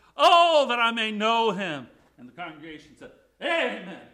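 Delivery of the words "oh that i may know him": put-on fervent longing, drawn-out, high, loud, slow. Speaking to a congregation, acting out Paul's passionate cry. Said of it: "Paul says it with great passion".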